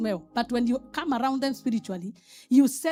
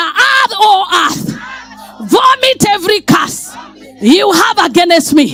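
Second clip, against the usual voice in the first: raised voice, higher and louder; 7 semitones higher, 15 dB louder than usual. Leading a prayer against curses after calling for louder: saying it louder.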